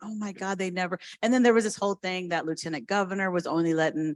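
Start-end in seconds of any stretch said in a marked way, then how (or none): 0.0-1.0 almost crying exclamation, near tears. Retelling watching the legislative session unfold, imitating own near-tears. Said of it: "almost crying, going".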